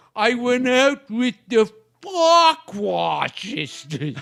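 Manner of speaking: wacky goofy voice, very slow, every word dragged. Retelling a bit where Gleason asks a question; answer in Crazy's wacky voice. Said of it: "they both like talked in wacky voices".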